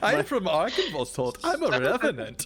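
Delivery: put-on German accent. Asked to put on a german accent, answering in a put-on german accent. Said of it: "You must put on a German accent".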